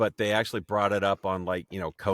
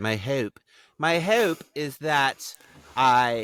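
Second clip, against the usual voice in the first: slow, enunciated, pitched-up quasi-English accent; 5 semitones higher than usual. Talking about a personal goal, noticing own quasi-English accent: quasi-English accent. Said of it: "in a quasi-English accent".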